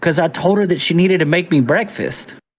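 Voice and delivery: ordinary talk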